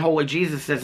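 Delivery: ordinary talk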